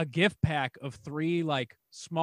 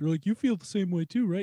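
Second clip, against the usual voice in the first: pitched-up, high cartoon bear voice; 4 semitones higher than usual. Quoting coffee-loving people who talk to her, the speaker does a Winnie the Pooh voice. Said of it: "Why do you give them a Winnie the Pooh voice?".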